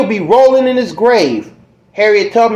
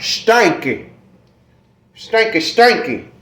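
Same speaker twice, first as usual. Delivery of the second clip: "stinky" said in put-on southern American accent; 4 dB quieter than usual. Speaker repeats a word to show how it should sound, in southern style. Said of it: "You gotta say it in the southern style".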